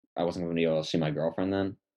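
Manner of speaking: rushed, rapid-fire, really fast delivery.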